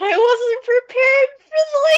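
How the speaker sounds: high loud scream while crying.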